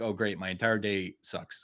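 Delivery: ordinary talk, nothing marked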